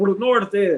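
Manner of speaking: put-on sudden, high, yelled call-out. Telling a story, acting out what a youngster yelled out: retelling a yell. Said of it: "he just yelled out".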